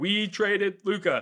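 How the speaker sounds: high-pitched shouting. Retelling a phone call at a concert: retelling screaming on phone. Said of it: "screaming on the phone".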